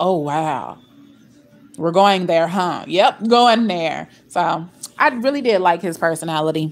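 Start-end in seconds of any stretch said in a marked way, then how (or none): 0.0-2.8 put-on calm, cool, unbothered voice, lower. Describing his reaction when she got loud: imitating Scott's calm, cool reaction. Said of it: "he's just so calm and cool and just".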